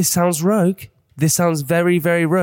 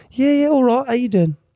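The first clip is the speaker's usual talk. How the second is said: offhand, matey, casual character voice, higher pitch; 7 semitones higher than usual. Playing Danny in a skit while the other speaker plays Jack. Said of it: "I'll pretend I'm Danny".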